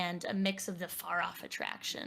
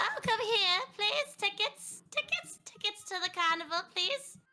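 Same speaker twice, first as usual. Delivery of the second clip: put-on very high, shrill, loud little old lady voice; 14 semitones higher, 5 dB louder than usual. Voicing a ticket-taker collecting tickets at the turnstile: old carnival ticket woman voice. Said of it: "small little woman who honestly should have retired years ago".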